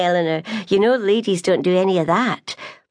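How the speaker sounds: plain reading voice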